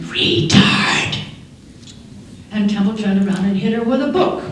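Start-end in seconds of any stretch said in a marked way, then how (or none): 0.0-1.2 sharp, hissing whisper. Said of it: "one of the girls hisses at her".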